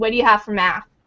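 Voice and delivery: put-on huffy voice. Retelling how teachers come in asking about math: imitating a huffy teacher. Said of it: "all huffy".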